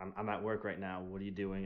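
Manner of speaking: put-on annoyance. Quoting a character's line about being at work, acting irritated. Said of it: "kind of a little irritated".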